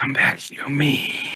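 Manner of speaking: slithering, breathy whisper. Describing the voice heard deep in the back of your head: slithery voice. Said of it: "you hear that slithery voice".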